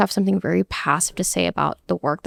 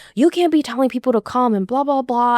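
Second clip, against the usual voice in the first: mock shouting, higher and faster; 5 semitones higher than usual. Recounting a man from production yelling at him at his desk, imitating someone shouting. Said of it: "he's full on just shouting at me".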